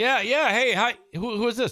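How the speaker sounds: put-on very high, befuddled, gullible-sounding older voice. Acting out an older person answering a scam call: acting out an older scam victim. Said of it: "older set and hard living line people".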